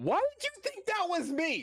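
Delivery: very high, affronted, outraged, indignant, swooping delivery. Predicting a friend's reaction to a result: imitating a friend's indignant reaction. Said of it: "he's gonna hear that result and go".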